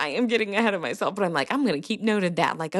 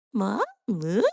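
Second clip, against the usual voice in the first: mock happy, babbling baby voice. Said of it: "when she's happy".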